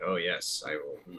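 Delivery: low, slow, stoic deadpan monotone. Imitating a stoic, anime-protagonist-like guy, in a flat monotone voice. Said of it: "He's like stoic and monotone".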